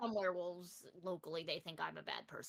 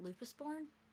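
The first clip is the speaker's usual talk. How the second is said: lowered, hushed voice, pitched up; 8 semitones higher, 3 dB quieter than usual. Voicing a character who looks around and asks him privately: lowered voice so only he can hear. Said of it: "lower her voice completely down to only he can hear it".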